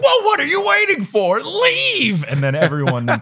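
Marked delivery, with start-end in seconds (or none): 0.0-2.2 very high, shrieking scream. Retelling how Harry orders the scared kids to leave: imitating Harry screaming. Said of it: "Harry does this thing where he screams".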